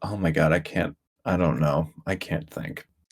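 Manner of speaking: low, soft, deadpan monotone. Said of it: "the monotone of".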